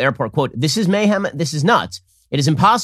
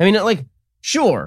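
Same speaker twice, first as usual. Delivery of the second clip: usual speaking voice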